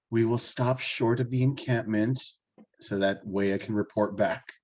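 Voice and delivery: low, hushed half-whisper. In a tabletop game, a player speaks in character to the group, half-whispering. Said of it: "I'm just going to whisper".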